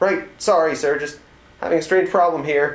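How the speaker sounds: nervous, uneasy voice. Commander Burton replies to his superior, who has just scolded him; nervous voice. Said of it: "The nervous voice of Commander Burton came back".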